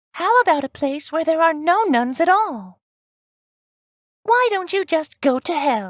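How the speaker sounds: calm and sweet delivery. Narrating a joke, a nun turns to the men, in a sweet, calm voice. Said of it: "in a very sweet and calm voice says".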